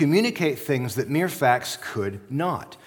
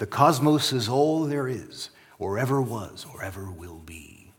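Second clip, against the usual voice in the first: slow, drawn-out, evocative, spooky narration; 3 semitones lower than usual. Quoting a famous opening line in an imitated voice: Carl Sagan voice. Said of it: "He's got this kind of evocative voice".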